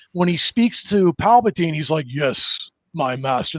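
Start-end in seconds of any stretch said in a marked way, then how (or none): 2.1-3.6 obedient tone, dropping low, with weighted pause. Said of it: "that pause".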